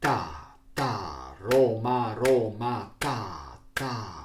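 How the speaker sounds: rhythmic drill cadence. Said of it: "I will repeat with Roma".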